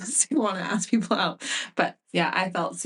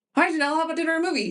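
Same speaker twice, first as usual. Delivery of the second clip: high, rushed blur of words run together; 9 semitones higher than usual. Retelling what he said to Janelle in the lunchroom: a very fast blur of words. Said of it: "He said it so fast".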